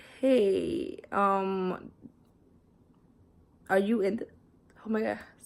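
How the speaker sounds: with hiccups. Telling a story about a boy from another class, hiccuping. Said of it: "sorry, I have hiccups now".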